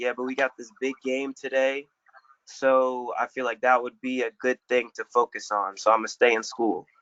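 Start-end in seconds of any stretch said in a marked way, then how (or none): none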